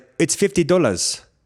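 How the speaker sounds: put-on speaking with Kenyan accent. Retelling how a man named his price when you asked, answer in a put-on Kenyan accent. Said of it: "that was a pretty good Kenyan accent".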